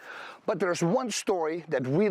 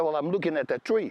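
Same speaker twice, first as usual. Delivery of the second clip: normal talking voice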